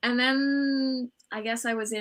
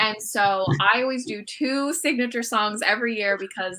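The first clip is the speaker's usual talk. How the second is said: usual speaking voice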